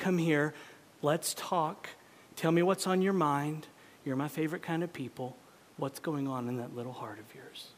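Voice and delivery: tender, compassionate tone. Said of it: "the most compassionate tone in his voice".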